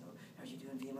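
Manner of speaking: whispered, awkward and hushed. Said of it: "everyone talking like this".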